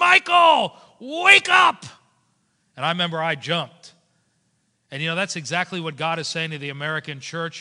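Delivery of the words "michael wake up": put-on high, loud yell in a Lebanese accent. Speaker retells his mom finding him asleep while studying, imitating her Lebanese-accented yell. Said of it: "she yelled in her Lebanese voice".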